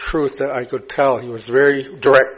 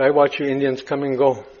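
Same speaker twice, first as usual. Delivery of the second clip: plain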